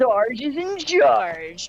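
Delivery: high, very slow, deliberate drawl. Doing an impression of Sarge after the others agree to hear it. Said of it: "do you wanna hear my impression of Sarge?".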